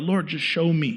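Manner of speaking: acted-out pleading. Retelling how they prayed in their car, retelling begging. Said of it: "I'm just like begging him in my car".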